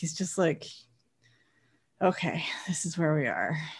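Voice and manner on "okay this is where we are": low, soft, weary sigh. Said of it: "just kinda sighs".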